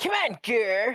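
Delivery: belted, loud cartoon alien voice. Friends trading cartoon voices; one asks to do an Invader Zim impression. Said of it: "Can I can I do an Invader Zim?".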